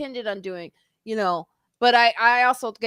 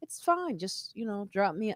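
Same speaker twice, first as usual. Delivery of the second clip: quieter, put-on very calm tone; 3 semitones lower than usual. Retelling what a passenger said to an upset driver, imitating a very calm reply. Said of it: "very calmly".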